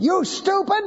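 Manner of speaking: high, snapped-out, bossy mock voice.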